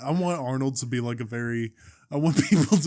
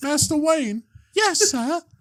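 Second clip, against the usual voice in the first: very high, raised British schoolboy voice; 5 dB louder than usual. In an improvised bit, answering as Batman in a high-pitched little British schoolboy voice. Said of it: "a high pitched little British schoolboy".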